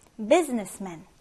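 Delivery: businessman with BUSI stressed, pitch falling at the end. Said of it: "첫 음절에 일 강세를 두고 읽어볼까요".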